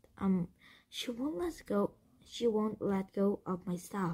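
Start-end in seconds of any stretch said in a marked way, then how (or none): none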